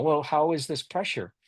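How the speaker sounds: ordinary talk, nothing marked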